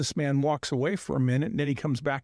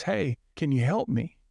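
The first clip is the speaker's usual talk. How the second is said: put-on defeated, half-hearted, unenthusiastic voice, nearly giving up. Telling a story, voicing a discouraged man calling to a group for help, retelling a defeated plea. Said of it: "Almost in a defeated tone".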